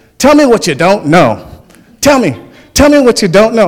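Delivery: put-on Alabama accent. Recalling the question a coach would ask the team, in his Alabama accent. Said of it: "in his Alabama accent".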